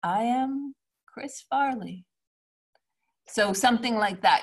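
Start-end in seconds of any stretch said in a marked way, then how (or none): 0.0-2.0 amused yet slightly sad, slow, slightly high bittersweet tone. Lesson reading the documentary title i am chris farley: happy, amused, but a little sad. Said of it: "It should feel happy, amused, but also a little bit sad. So you would say".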